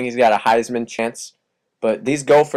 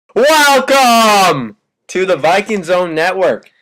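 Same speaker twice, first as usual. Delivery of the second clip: loud, high, thrilled excited yelling; 7 semitones higher, 6 dB louder than usual. Opening the viking zone network, welcoming listeners: excited yelling. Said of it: "I'm yelling because I'm excited".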